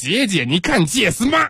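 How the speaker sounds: Tianjin-dialect speech, pitched high. Demonstrating regional dialects for the others, say it in a Tianjin accent. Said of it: "天津有特点，他们说话有特点。".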